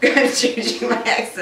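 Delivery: plain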